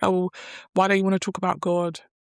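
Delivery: acted accusing tone. Retelling what a woman who approached them said, imitating an accusing tone. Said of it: "became very accusative".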